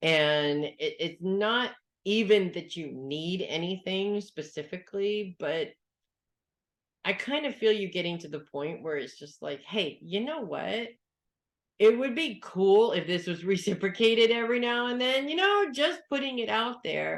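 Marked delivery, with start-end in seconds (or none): 9.6-15.3 mocking sarcasm, high pitch swooping up and down. Showing how asking for reciprocation sounds done sarcastically: sarcastic tone. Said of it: "in a sarcastic way like I just did".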